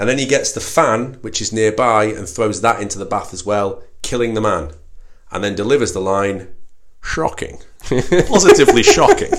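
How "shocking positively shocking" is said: very high movie-spy voice, pitch swooping way up. Quoting a film hero's line after a kill: Sean Connery Bond impression. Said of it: "That was very good, that impression".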